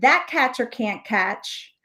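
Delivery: ordinary delivery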